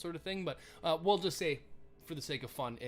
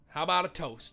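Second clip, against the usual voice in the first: ordinary talk, nothing marked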